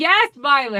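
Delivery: loud, high-pitched yelling. Retelling a story, the speaker voices a group answering Violet, imitating a yell. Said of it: "And they're still yelling".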